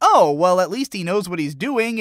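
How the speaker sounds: ordinary delivery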